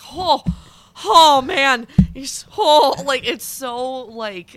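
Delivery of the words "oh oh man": put-on weepy sobbing, very high and loud. Retelling a video of Mark Hamill seeing the Yoda puppet: imitating Mark Hamill crying. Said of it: "he's, like, crying, and he's just like".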